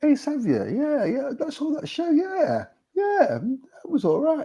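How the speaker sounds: put-on lukewarm, grudging tone, high and drawn-out. Describing how a friend critiques you, mimicking a doubt-sowing tone. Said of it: "they're giving you that tone to sow this doubt".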